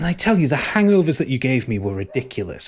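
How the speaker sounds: feminine character voice. Voicing a shapeshifter speaking to a player: feminine voice of Briaga. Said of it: "the voice changes to something feminine".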